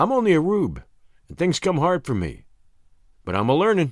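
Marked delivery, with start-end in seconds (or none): none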